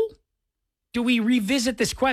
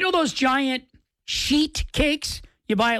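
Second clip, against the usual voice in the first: slow, careful "sheet cakes". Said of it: "I have to say it nice and slow".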